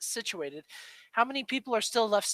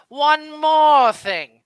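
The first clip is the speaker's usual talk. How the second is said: belted out high and loud; 6 semitones higher, 12 dB louder than usual. Comparing God to a cartoon character, doing a bad Uncle impression. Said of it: "God is like Uncle from the Jackie Chan Adventures".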